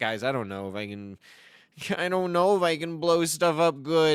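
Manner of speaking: nervous, bashful, hesitant creature voice. Speaker acts out a shy thing whose friends hype it up; put-on shy voice. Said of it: "It's like it's super shy".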